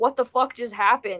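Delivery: normal talking voice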